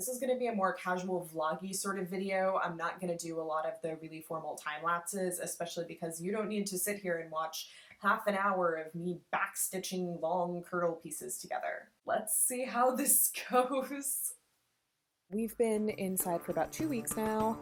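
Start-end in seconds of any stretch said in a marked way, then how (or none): 12.6-14.3 nervous laughing through the words, pitched up. Opening a casual vlog video, speaking to viewers with a nervous laugh. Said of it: "[nervous laugh]".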